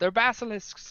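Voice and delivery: very high, loud yell in character voice. Calling out in character during a fight in the game: in-character yell. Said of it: "I'll yell out".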